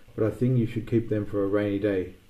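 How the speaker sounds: ordinary delivery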